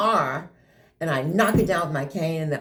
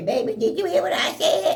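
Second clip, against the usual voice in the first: put-on very high big-mama grandma voice; 11 semitones higher than usual. Retelling how they called out an inattentive child as Grandmama: Grandmama character voice. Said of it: "Grandmama emerged when".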